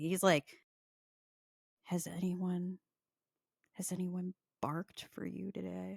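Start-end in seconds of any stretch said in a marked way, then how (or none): 1.8-6.0 very quiet, half-whispered voice. Retelling what a man half-whispered to him as he was about to leave, half-whispering. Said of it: "He whispers to me".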